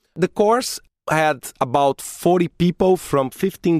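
plain

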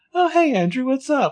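put-on, super sweet, sugary, very high-pitched voice. Retelling a scene where Arya greets Andrew: imitating Arya's super sweet voice. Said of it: "She turns around and gets super sweet".

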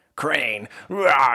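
loud gritty growl. Describing a game interrogation scene, speaker voices Bigby questioning Crane: gritty Bigby voice. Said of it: "and this is really gritty".

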